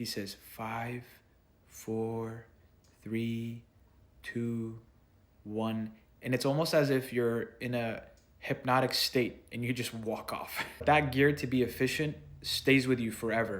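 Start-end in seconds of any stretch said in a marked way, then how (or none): 0.6-5.9 calm, quiet, hushed, very slow peaceful cadence. Retelling how he counted down before the jump, imitating a quiet peaceful tone. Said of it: "he has this quiet, peaceful tone".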